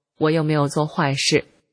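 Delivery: ordinary talk, nothing marked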